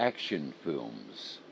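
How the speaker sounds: action stressed, films unstressed. Reading a list of film types, stress on action. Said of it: "the first word, action, is pronounced stronger".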